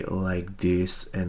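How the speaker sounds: soft, quiet, low-pitched delivery. Speaker demonstrating how they sound in their old recordings: soft and low voice. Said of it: "(soft and low voice)".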